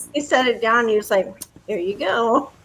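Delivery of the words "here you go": grudging, pointed, passive-aggressive politeness. Remembering a waiter setting down more salsa, in a mock passive-aggressive tone. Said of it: "the passive aggressive tone in his face and voice".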